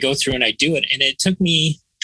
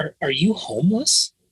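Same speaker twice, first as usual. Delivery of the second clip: put-on voiced stage whisper, half-whispering; 3 semitones higher than usual. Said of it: "he was kind of whispering it".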